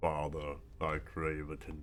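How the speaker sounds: deep, hushed, soft low voice. Giving your puppy a voice as it speaks to its father, deep James Earl Jones voice. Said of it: "having a deep James Earl Jones voice".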